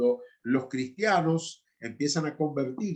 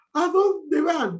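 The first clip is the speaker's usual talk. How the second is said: put-on young girl's high, loud, anguished, desperate pleading; 14 semitones higher, 7 dB louder than usual. The speaker retells what one of the girls asked her; imitating a girl's desperate question. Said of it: "con una cara de desesperación".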